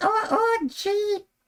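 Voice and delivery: very high puppet voice, jumping into tiny high voice. Trying the high voice again and sliding into it: accidental Elmo voice. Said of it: "I go right to Elmo".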